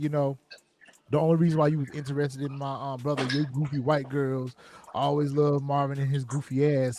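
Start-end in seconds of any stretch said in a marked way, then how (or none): none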